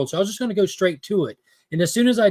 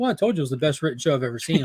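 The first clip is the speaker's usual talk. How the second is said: mock flat blasé delivery; 3 semitones lower, 3 dB quieter than usual. Speaker retelling what he said about the show, mock-blasé delivery. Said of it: "but you said it like that".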